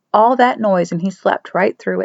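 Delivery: plain reading voice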